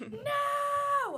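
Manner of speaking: play-acted, very high, drawn-out, held-back stifled scream. Retelling reacting to a TV broadcast cut-in, imitating a held-back scream. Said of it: "I'm not gonna scream 'cause I don't wanna".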